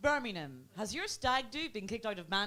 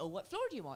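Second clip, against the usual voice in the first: put-on English woman's voice with English accent; 4 semitones lower, 5 dB quieter than usual. Retelling what an English lady in a lift asked: imitating an English lady. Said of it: "English lady said to me".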